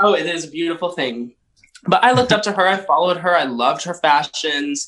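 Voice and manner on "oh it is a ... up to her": emotional, moved, heartfelt. Telling how they looked up to a friend, getting emotional. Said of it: "You're getting emotional".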